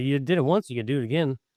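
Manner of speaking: normal talking voice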